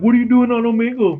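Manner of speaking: high cartoon frog-puppet voice. Retelling a video of Kermit the Frog on Omegle: imitating Kermit the Frog. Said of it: "he'll be like".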